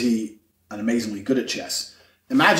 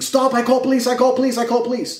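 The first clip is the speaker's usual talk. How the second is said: mock shrill, very high, repeated shrieking; 12 semitones higher than usual. Retelling a fight where the man behind the counter screamed: imitating someone screaming. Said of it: "was screaming".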